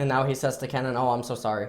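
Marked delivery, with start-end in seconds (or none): 1.0-1.7 put-on overly formal, stiff tone. Retelling what a player said to Kennen: imitating an overly formal apology. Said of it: "In the most formal way".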